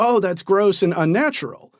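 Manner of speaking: ordinary talk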